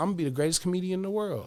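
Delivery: put-on five-year-old little kid's voice. Telling how a five-year-old son talks, imitating his five-year-old son. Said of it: "he look up at me and he be like".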